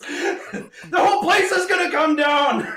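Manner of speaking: very high, shrill, loud furious shout. Voicing the sister Tasha as she turns on the group: Tasha's furious yell. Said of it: "She yells".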